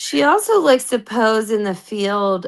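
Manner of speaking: plain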